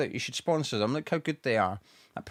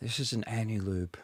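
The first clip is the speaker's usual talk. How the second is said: put-on advert voiceover, quieter; 2 semitones lower, 4 dB quieter than usual. Among friends joking about the advert voice a woman used to do, in the Marks & Spencer advert voice. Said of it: "That's the voice".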